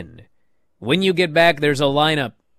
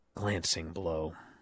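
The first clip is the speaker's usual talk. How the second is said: very deep, very quiet, barely audible mumble; 11 semitones lower, 18 dB quieter than usual. Retelling a commentator's remark after a missed kick: quietly muttering like Corey. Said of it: "Corey literally quietly mutters".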